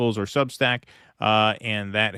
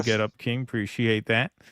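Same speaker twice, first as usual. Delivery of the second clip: normal talking voice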